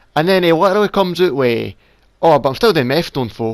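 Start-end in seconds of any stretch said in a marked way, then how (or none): 2.2-3.5 put-on junkie voice, offhand and casual. Retelling a remark overheard in a shop: imitating a junkie, offhand. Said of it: "he said it like it wasn't worse".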